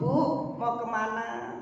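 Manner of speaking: tender, soft, gentle, mild-mannered tone. Acting out a man asking a neighbour a question: imitating a gentle, soft asker. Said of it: "Bapak bertanya dengan lemah lembut".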